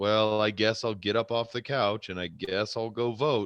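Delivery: ordinary delivery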